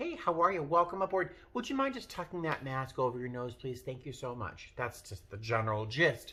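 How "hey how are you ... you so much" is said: play-acted courteous, friendly, pleasant tone, pitched up. Retelling how they asked a wife about her mask, retelling a polite, pleasant request. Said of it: "when I politely, pleasantly".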